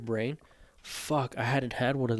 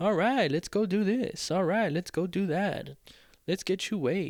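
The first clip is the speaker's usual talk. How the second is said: mock passive-aggressive, high, joking sarcasm; 7 semitones higher than usual. Retelling how other medical staff spoke during the visit: imitating sarcastic staff. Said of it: "a little sarcasm".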